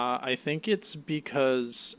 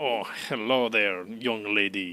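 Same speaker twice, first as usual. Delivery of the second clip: put-on French voice; 3 semitones lower than usual. Retelling how a character hits on Nami: imitating a weird Frenchman. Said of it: "he's like a weird Frenchman".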